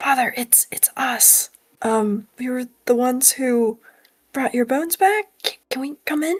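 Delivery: hushed, soft whisper. A player's character casts a message cantrip to the Father, whispering. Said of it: "I'm gonna just kind of whisper".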